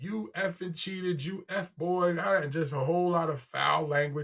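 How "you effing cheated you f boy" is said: mock heated accusing cry, pitched up. Retelling a video where a woman screams at her partner: imitating a woman screaming. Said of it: "She's screaming at him".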